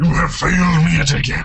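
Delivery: robotic villain voice. Doing a quick voice bit while others talk about voices: Megatron voice. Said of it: "or that was Megatron".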